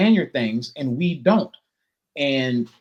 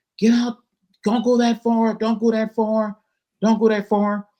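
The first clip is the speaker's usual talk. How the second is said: acted-out, pitched-up lifeguard yelling; 8 semitones higher than usual. Recalling lifeguards warning swimmers about the waves, imitating lifeguards yelling. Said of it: "So the lifeguards kept yelling".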